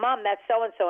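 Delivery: ordinary delivery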